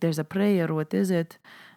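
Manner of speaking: imitated Lebanese accent. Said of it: "I knew I said I wasn't gonna do the accent".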